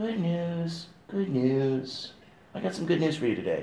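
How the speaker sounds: hushed, very quiet, flat, lifeless, no gusto. Speaker shows the wrong way to bring good tidings, without strength or gusto. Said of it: "not like this".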